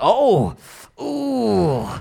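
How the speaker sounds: nervous fretting. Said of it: "nervous, like".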